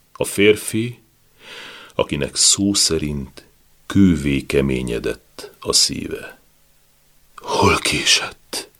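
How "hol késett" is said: rasping, wheezing, death-rattle voice. A dying husband speaks to his wife as she arrives; rasping, wheezing voice. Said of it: "Hörögte a beteg".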